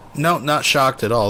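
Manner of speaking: ordinary delivery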